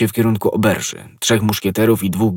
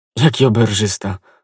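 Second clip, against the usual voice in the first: usual speaking voice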